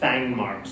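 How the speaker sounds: plain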